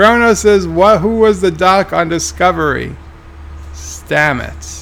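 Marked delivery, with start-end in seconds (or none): none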